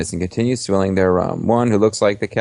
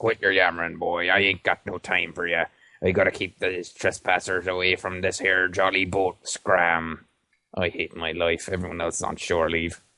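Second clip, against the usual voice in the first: put-on soft, grumbling, gruff old pirate growl; 8 dB quieter than usual. An old sailor on the dock answers a polite greeting, growling old pirate sailor. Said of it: "he growls".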